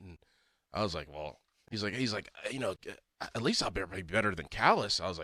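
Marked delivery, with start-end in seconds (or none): 2.5-5.0 imitated voice in a half whisper. Retelling a talk with a friend about getting in shape: Mackie impression, half whisper. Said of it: "That's your Mackie impression".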